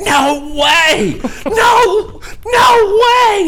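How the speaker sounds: put-on very high, very slow, rising scream. Retelling a phone call, acting out the other caller screaming. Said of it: "Literally screamed".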